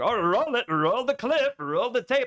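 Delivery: mock offhand, comic, dismissive, high, drawn-out tone. Complaining about a remark Hila made, imitating Hila mock-dismissively. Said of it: "dismissively and, and comedically saying".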